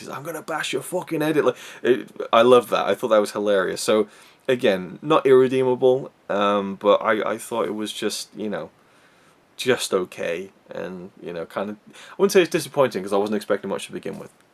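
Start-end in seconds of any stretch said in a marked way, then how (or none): 0.1-1.5 put-on pitched-up Liverpool Scouse accent. Imitating a demon monster from a film: scouse accent. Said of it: "has a Scouse accent".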